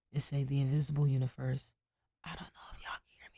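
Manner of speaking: hushed whisper. Reading aloud to viewers with a sleepy person nearby, whispering. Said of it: "I'm whispering".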